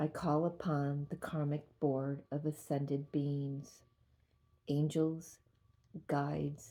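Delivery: very slow, deliberate read-aloud delivery.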